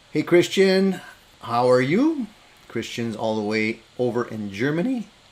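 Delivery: voice cracking and breaking, drawn out. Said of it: "My voice is cracking".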